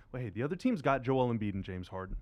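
plain

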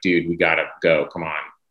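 plain

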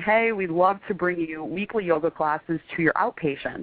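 normal talking voice

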